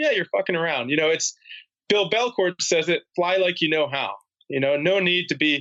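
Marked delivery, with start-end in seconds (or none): none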